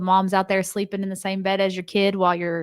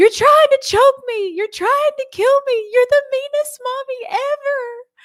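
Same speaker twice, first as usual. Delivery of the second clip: put-on very high little kid scream; 6 dB louder than usual. Mother retelling her son screaming during a throat test, imitating a child screaming. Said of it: "He's screaming at the top of his lungs".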